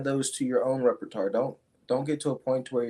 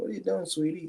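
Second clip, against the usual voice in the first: extremely soft voice, pitched up; 6 semitones higher, 4 dB quieter than usual. Retelling how their mom spoke when they walked in at 2 a.m., softest voice. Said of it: "In the softest voice ever".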